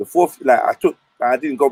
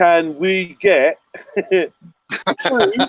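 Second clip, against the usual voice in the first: very slow, high, spelled-out, over-explaining delivery; 5 semitones higher than usual. Mocking how people talk to someone who doesn't understand, mocking slow speech to foreigners. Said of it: "this is what they do".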